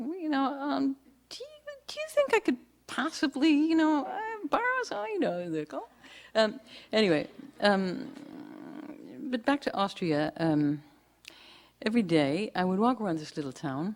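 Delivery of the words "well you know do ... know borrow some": very high, rising, pleading voice. Showing how a friend sounds asking for a loan: imitating a friend asking for a loan. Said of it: "the voice goes".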